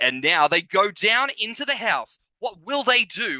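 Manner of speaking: Australian announcer-style voice. Describing an American dating show, imitating its Australian presenter. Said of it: "this Australian presenter being like".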